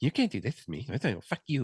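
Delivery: petty, bratty schoolgirl voice. Mocking a girl who sat in the corner of the classroom: imitating a girl in the classroom. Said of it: "used to sit there and go".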